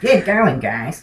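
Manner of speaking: terrible, goofy, dumb cartoon nerd voice. Speaker describes Chris as the typical nerd, then does a bad Chris impression. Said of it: "That's my Chris impression".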